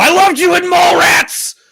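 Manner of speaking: very loud, shrill, high-pitched, rough yelling holler. Retelling what was yelled on seeing an actor: retelling own yell. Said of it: "I audibly yelled".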